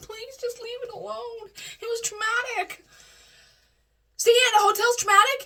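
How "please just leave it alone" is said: soft, mock tearful voice under the breath. Retelling a talk with Mom, who kept asking what was wrong, retelling a tearful plea. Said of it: "I'm crying at this time".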